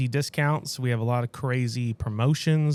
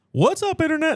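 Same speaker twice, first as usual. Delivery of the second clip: very high-pitched voice; 3 dB louder than usual. Starting a greeting to the internet in someone else's style: imitating Chris. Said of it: "that's Chris".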